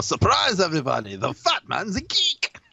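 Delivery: bad put-on voice, high, swooping, slow, sing-song. Joking after a failed accent, doing a bad Guillermo del Toro impression. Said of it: "my impression of Guillermo del Toro is no, is no better".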